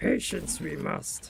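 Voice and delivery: hushed, breathy, soft little sage voice. Repeating the phrase after being told they were channeling Yoda, in a Yoda voice. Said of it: "That's my best uh, Yoda voice".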